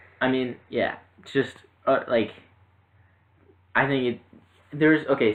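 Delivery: stuttering a lot, stumbling and halting. Chatting about a comic book movie and its Blu-ray, speak stuttering a lot. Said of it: "I'm stuttering a lot".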